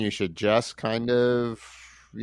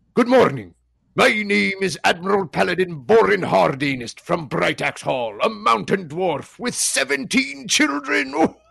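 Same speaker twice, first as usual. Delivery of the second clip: raspy pirate voice, very high; 9 semitones higher, 4 dB louder than usual. Introducing a character to the group by name, in a pirate voice. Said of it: "he sounds like a pirate".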